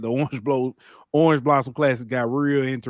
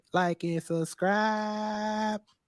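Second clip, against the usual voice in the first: lightly put-on woman's voice, higher and softer; 8 semitones higher, 7 dB quieter than usual. Tell them again what she put up there, imitating her voice. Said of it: "I said it in her voice".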